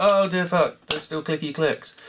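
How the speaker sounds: ordinary delivery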